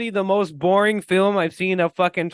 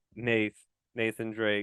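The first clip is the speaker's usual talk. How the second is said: dead flat, emotionless monotone; 8 semitones lower, 9 dB quieter than usual. Acting out a dull movie scene, doing a Tom Holland impression. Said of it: "fucking Tom Holland's like".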